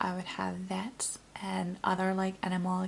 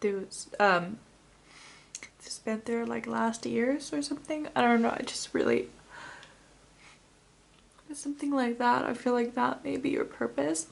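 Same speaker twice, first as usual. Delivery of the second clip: tearful, crying, voice breaking; 4 semitones higher, 3 dB louder than usual. Addressing someone they love in a heartfelt message: crying. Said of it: "I'm crying".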